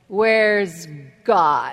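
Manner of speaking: really stern, low voice. Telling a story, the speaker voices a pastor speaking to a young man, retelling stern words. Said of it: "he said real sternly".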